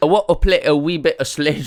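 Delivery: put-on British accent.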